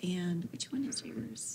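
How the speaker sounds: soft, voiceless whisper.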